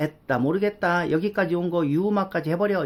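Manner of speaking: normal talking voice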